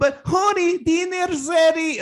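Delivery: exaggerated Latin American Spanish accent. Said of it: "She plays her accent up".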